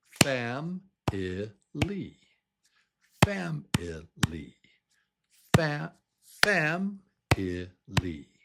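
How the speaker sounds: "family" in syllables, high-pitched and very slow. Speaker demonstrating the stressed syllable of a word to listeners, slowly split into syllables. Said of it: "So I'll do it like this".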